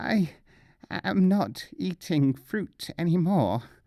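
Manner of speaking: high, hoarse, rasping croak. Narrator reads Nasruddin's reply, croaking. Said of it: "croaked Nasruddin".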